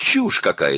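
losing temper, sudden angry flare-up. A man hears a report about forest defenders and flares up angrily. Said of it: "— вспылил Кроу".

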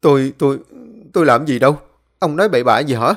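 stuttering, stammering, tripping over words. Tú answers an angry old man pointing at him, stammering. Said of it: "lắp bắp".

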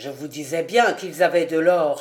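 ordinary delivery, nothing marked

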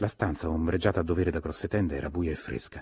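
plain

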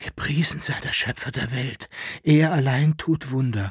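hushed whisper. Answering a companion's question about what he sees, whispered. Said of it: "flüsterte Jekyll-Henard".

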